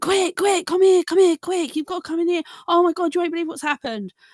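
mock hysterical panic. Retelling how he called the speaker into the kitchen, imitating hysterical panic. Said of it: "getting really hysterical in the kitchen".

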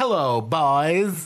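put-on old-timey 1940s voice, 'boys' drawn out. Greeting the others on arrival, saying hello in an old 1940s voice. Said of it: "Like an old 1940s".

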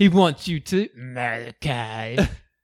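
put-on sarcastic demon voice. Recapping a scene where Isaac speaks in a demonic voice, imitating him mock-sarcastic. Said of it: "He's like so like shitty sarcastic".

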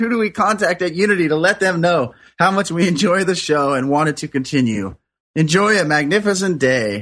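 normal talking voice

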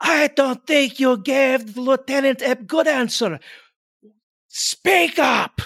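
very high, intimidating, loud shouted delivery. A player's character shouts at the troops to intimidate them: shouting. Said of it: "I am going to shout out to them".

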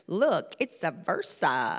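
odd put-on voice, very slow and drawn out. Retelling how a daughter pointed out every Versa: really weird voice. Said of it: "she would say in this really weird voice".

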